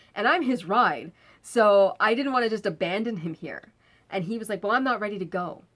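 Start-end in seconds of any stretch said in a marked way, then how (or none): 4.6-5.6 irritable, short-tempered, curt delivery. Retelling the friend's reply when asked to leave: imitating a short-tempered reply. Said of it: "really short-tempered with me".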